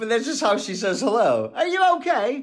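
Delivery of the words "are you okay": put-on Manchester accent, pitched very high. Retelling how the illustrator from Manchester says hello on the phone: imitating Penny's Manchester accent. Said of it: "I love the accent".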